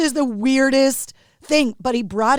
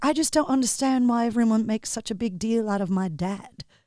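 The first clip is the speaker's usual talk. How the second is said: put-on soft child's voice with a British accent; 2 semitones lower, 5 dB quieter than usual. Retelling what a kid said once his mic was on, little British accent. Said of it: "with his little British accent".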